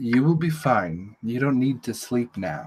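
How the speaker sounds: soft, faraway, echoing voice. Game narrator voicing a woman answering the player, in a distant, echoey voice. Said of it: "with that same sort of distant, echoey voice".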